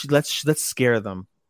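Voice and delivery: low, sultry, sexy whisper close to ear. Telling a story, voicing Vermeil whispering in a man's ear: Vermeil's sexy whisper. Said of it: "in the sexiest voice whisper in his ear".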